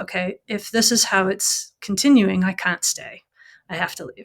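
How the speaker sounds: usual speaking voice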